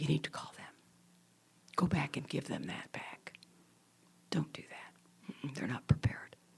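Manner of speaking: still, quiet, hushed, breathy near-whisper. Showing listeners how the still quiet voice talks, in a still, quiet voice. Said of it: "The still quiet voice talks like this".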